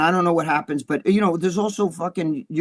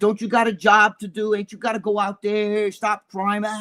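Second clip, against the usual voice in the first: mock swaggering, cocky, goading jeer; 4 semitones higher than usual. Retelling how a man taunted police officers in a store, imitating a cocky taunt. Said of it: "acting all cocky and shit".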